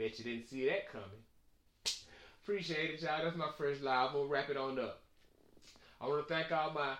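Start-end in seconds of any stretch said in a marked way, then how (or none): none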